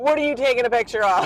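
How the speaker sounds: snarky. Retelling what a grandmother asked during a night shoot: imitating a snarky little voice. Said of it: "the snarkiest little voice".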